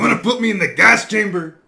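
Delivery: mock accent that sounds Mexican. Attempting the villain's line, imitating Fujiyama's accent. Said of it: "it sounds Mexican".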